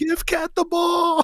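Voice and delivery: mock scream, very high-pitched and loud. Retelling a game moment, imitating own screaming. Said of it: "I was screaming".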